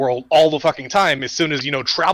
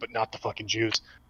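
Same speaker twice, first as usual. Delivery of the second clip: mock muttering, lower and quieter; 5 semitones lower, 12 dB quieter than usual. Imitating someone's hidden aside after a speech, imitating muttering under breath. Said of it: "under his breath going".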